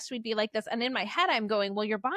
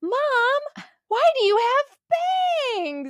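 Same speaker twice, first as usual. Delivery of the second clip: put-on very high child's shout, "mom" drawn out; 8 dB louder than usual. Mother recalls her daughter yelling across the kids at pickup: retelling a child's yell. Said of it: "she yelled like across all the kids".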